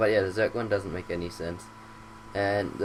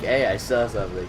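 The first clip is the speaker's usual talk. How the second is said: ordinary talk, nothing marked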